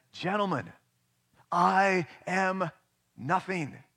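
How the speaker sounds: every word fiercely and sharply enunciated. Telling how Toscanini addressed his orchestra after an ovation: fiercely enunciated. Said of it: "In a fiercely enunciated voice".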